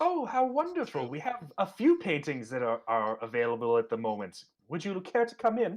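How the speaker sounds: put-on high, sing-song voice of a seventy-year-old woman. Playing a mother greeting visitors interested in her son's work, in a seventy-year-old woman voice. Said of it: "a seventy-year-old woman".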